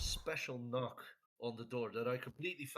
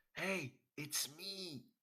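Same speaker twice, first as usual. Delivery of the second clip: loud, high-pitched stage whisper; 5 semitones higher than usual. A character whispers at a closed door to see if anybody's in there, loud whisper. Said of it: "I just whisper very loudly".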